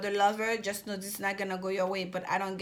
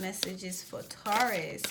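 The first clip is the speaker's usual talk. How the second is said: slow, hushed, drawn-out spirit voice.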